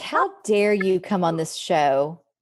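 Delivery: put-on scolding tv host voice. Imitating a talk show host scolding his guests: imitating Jeremy Kyle scolding. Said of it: "very kind of scolding of his guests".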